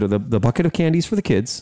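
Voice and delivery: ordinary talk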